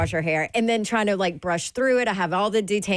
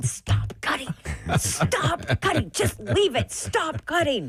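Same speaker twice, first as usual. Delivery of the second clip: under-the-breath whisper, pitched up; 6 semitones higher than usual. Retelling how a partner reacted during a haircut: imitating someone whispering.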